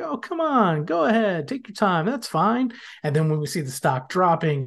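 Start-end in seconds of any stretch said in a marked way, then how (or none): 0.0-2.7 put-on, high, nice, accommodating, patient, friendly tone. Retelling a TV character waving drivers along: imitating Doug being nice. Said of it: "nice and he's waving people along".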